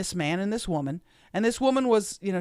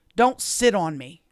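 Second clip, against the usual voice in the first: put-on nasty, mean-sounding voice. Retelling what she said as the speaker scooted back in the seat, mock-nasty voice. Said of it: "In this just nasty voice".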